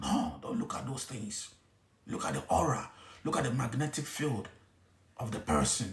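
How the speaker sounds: hushed voice. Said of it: "I'm trying to, you know, whisper".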